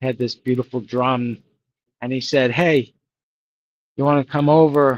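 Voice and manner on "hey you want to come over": put-on English accent, louder. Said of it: "He had the English accent".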